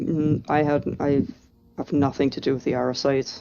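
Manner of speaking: very grave, solemn, deadly serious delivery. Voicing a character who denies ties to a family: very grave tone. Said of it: "in a very grave tone".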